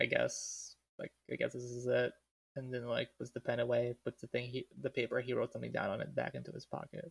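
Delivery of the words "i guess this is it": plain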